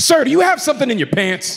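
mock very high voice, full of attitude. Retelling going through a scanner, quoting the guy who flagged him, mimicking his attitude. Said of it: "Guy comes at me with an attitude".

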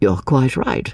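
usual speaking voice

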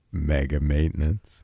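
very low, deep, gravelly announcer rumble. Showing how a phrase must be said, in a deep, gravelly voice. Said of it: "You got to get the deep, gravelly voice".

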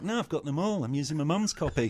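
put-on voice of a modern kid. Describing how children today react to the books, impression of a millennial child. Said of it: "Was that your impression of a child?".

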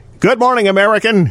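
high yell called out across a distance. Retelling a coworker's greeting called back down the aisle: imitating someone yelling. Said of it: "And he would yell".

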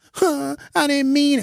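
very high, babyish put-on crying and blubbering. Acting out a caught teenager answering an arrest: mock crying. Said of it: "don't cry now".

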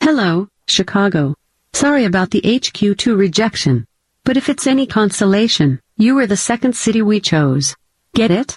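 put-on digital assistant voice. On the show, reading a viral message to Chicago, mocking Alexa voice. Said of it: "this mocking Alexa voice".

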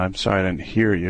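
normal talking voice

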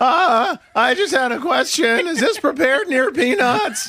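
very high, squeaky adolescent voice. Doing the voice another speaker asked for, puberty voice. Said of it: "Give me your like puberty voice that you do".

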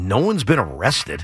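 mock, flat deadpan delivery. Retelling someone's answer to a question about physicality, imitating a deadpan reply. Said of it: "And deadpan".

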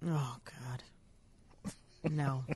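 very soft, barely audible, revolted disgust. Co-host hears that a 24-year-old is an Instagram star and reacts disgusted. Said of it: "You sound more disgusted than I do".

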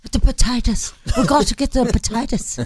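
put-on Irish brogue. Radio host greeting listeners on St. Patrick's Day, put-on Irish accent. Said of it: "My son can do the best Irish accent, but he always talks about potatoes".

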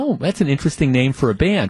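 ordinary talk, nothing marked

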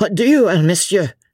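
high, sputtering stammer choked with anger. A man treated with insolence by Blakeney answers him, stammering in wrath. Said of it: "he stammered".

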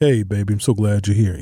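deep, low voice. Acting out a man answering the door, in a deep voice. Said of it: "he answers the door in a deep voice".

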